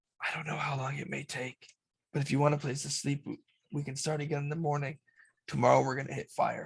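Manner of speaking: quiet half-whispered words. Voicing Torga telling the group they can rest tonight: half-whispering. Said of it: "he basically whispers to the rest of you".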